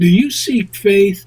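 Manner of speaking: ordinary talk, nothing marked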